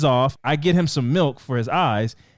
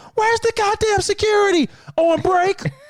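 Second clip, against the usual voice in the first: very high, furious, angry shouting. Retelling a man yelling back at others about missing security, imitating someone yelling. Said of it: "He's yelling back at them".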